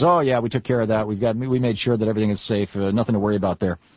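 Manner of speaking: ordinary talk, nothing marked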